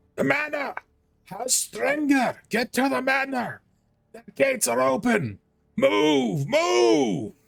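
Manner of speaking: shrill, raw, very high, rough top-of-lungs scream. Game narrator voices a man yelling at everyone around him, screaming at the top of lungs. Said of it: "screaming at the top of his lungs".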